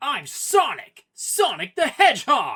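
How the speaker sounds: put-on very high, loud, swooping edgy teenage voice. Comparing Sonic voice actors, doing an edgier teenage Sonic, Jason Griffith-style. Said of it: "Jason sounds edgier when on the teenage spectrum".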